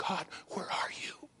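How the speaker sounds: soft, unvoiced, pleading whisper.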